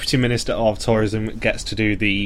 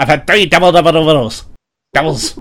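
put-on hyper host voice, higher and louder; 5 semitones higher, 7 dB louder than usual. Joining the impression of Monty: hyper Monty impression. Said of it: "he just gets more and more hyper".

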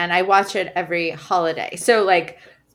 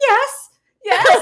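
put-on very high, loud little old lady voice; 5 dB louder than usual. Telling how two people joking in the yard heard the neighbor's visiting mom, Karen's little old lady voice. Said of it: "this little old lady be like".

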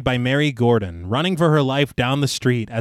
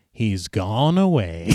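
mock mysterious, cryptic, evasive delivery; 5 semitones lower than usual. Retelling how one man looked away and answered, putting on a cryptic tone. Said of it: "very cryptically says".

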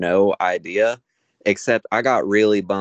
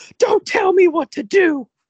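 put-on scream, very high and shrill; 4 dB louder than usual. Retelling a fighter in the ring turning toward them, imitating someone screaming. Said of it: "and just screams".

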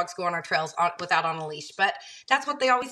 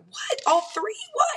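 mock, very high, screamed disbelief. Recounting finally getting an answer about the dogs, retelling a scream. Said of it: "So finally I just start screaming".

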